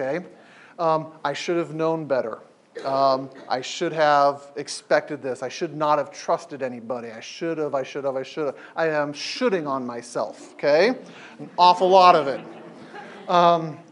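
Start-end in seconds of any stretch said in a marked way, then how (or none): none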